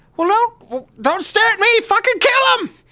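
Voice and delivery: very high, shrieking, yelling goblin voice. Voicing a goblin leader ordering the others to attack: yelling goblin boss. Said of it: "Dulce yells".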